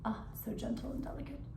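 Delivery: soft, fake British accent, rattled off quickly. Plugging a product's discount code, switching into a put-on british accent. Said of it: "my British accent".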